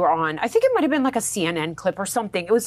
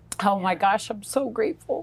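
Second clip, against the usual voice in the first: weeping, tearful, overwhelmed with gratitude. A guest speaking to the host, crying with gratitude. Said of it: "although I'm crying, it's like sheer gratitude".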